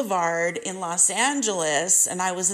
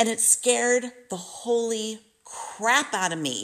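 normal talking voice

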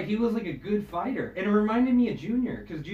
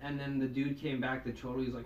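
usual speaking voice

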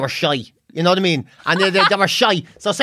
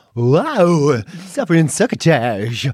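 drawling, with "wow" stretched out; 3 semitones lower than usual. Imitating a radio presenter reacting to a guest: Snagglepuss voice. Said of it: "He's got a real Snagglepuss".

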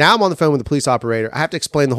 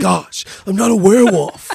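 high-pitched, awkward nerdy voice; 7 semitones higher, 4 dB louder than usual. Replying to a story about Brett denying he's a werewolf, Napoleon Dynamite voice. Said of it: "you almost sound like Napoleon Dynamite".

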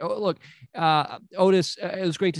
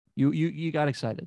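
plain

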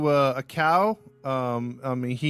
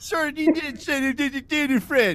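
goofy cartoon mom voice, pitched much higher. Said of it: "Why you sound like Goofy?".

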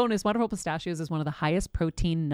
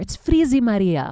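put-on loud Greek accent; 3 semitones higher, 9 dB louder than usual. Remembering your mom struggling with her hair, in mom's Greek accent. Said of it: "my mom would say in her Greek accent".

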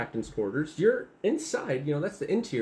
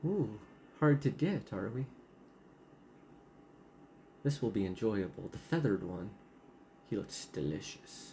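female voice, lower and quieter; 5 semitones lower, 8 dB quieter than usual. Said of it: "You hear a female voice".

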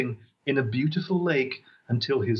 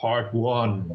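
looming, big, ominous voice-of-God delivery; 3 semitones lower than usual. Host demonstrating a voice to signal part one, in a big, ominous voice. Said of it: "ominous voice".

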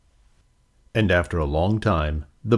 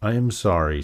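plain

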